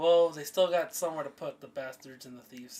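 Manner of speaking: ordinary talk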